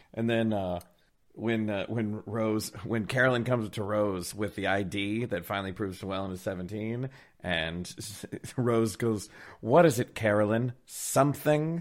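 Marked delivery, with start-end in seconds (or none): 9.6-11.9 loud, snarky tone. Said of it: "So snark".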